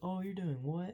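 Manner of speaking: brash loudmouth delivery. Retelling how a guy reacts to another's answer: imitating Jimmy being loud and obnoxious. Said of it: "him being loud, obnoxious".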